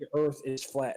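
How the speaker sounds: plain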